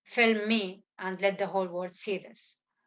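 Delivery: ordinary delivery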